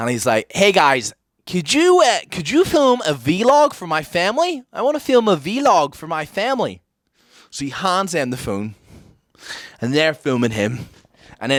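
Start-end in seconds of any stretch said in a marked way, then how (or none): 0.5-6.8 phoney, put-on American accent, sing-song. Retelling a man approaching people in the park to film a vlog: put-on American accent. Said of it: "he puts on an American accent".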